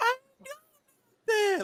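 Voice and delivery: mock caught-out voice. Imitating how people sound when caught doing something: imitating a caught-out tone. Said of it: "they voice make that same little".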